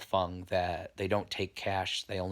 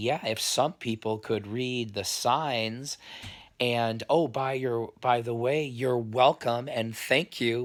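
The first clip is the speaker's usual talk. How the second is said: condescending, demeaning, belittling tone; 4 semitones higher, 4 dB louder than usual. Retelling how a man in a bar belittled a friend: imitating a demeaning tone. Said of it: "start demeaning him".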